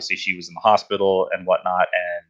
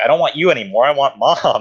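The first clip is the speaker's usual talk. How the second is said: play-acted, raised, high, angry little-kid tantrum; 6 semitones higher, 5 dB louder than usual. Retelling what they said as a young child: imitating an angry child. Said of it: "I got really mad with my dad".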